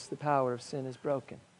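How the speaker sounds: hushed, low-volume delivery. Speaker demonstrates how a point about sin is usually stated, in a quiet voice. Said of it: "we say in a quiet voice".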